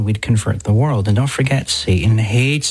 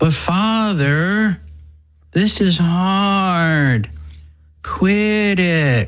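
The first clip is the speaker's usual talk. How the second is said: put-on mock whining, higher pitch; 8 semitones higher than usual. Acting out a listener complaining to father: put-on whiny voice. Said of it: "that whiny voice".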